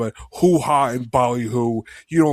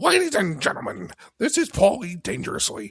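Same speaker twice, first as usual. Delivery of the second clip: pitched-up, announcer-style wrestling promo voice; 8 semitones higher, 4 dB quieter than usual. Cutting a pretend promo introducing a TV show: Paul Heyman voice. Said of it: "you made me do a Paul Heyman voice on the Discord earlier".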